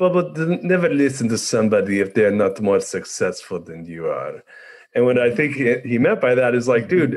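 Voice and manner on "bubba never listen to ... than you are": put-on strong Persian accent. Retelling his dad's advice from when he was sixteen, in a heavy Persian accent. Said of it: "He said it with his heavy Persian accent".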